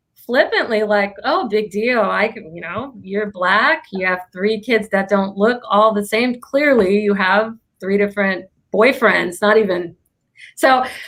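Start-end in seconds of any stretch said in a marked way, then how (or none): none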